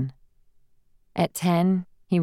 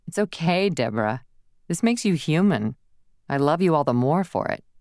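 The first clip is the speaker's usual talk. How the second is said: usual speaking voice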